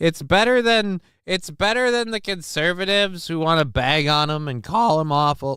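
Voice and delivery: voice breaking partway. Talking to listeners, voice cracking mid-sentence. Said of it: "voice crack".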